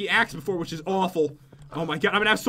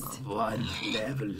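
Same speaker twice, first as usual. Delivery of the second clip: put-on eerie, creepy voice, very low; 10 semitones lower, 9 dB quieter than usual. Asking a pig for experience, joking: put-on creepy voice. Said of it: "That was creepy".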